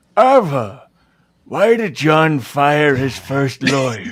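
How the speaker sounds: loud, slow, deliberate, drawn-out put-on reading voice. Reading a quiz question aloud to a player: Charlton Heston voice. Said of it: "read this one as with my Charlton Heston".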